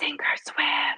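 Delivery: breathy, soft, secretive whisper. The speaker retells what a niece whispered in their ear, retelling a whisper. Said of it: "she just whispers in my ear".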